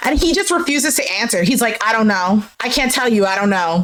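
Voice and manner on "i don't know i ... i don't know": put-on uninterested, disinterested tone. Retelling a man's refusal to answer on a show: imitating a disinterested reply. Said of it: "with the most, like, disinterested expression".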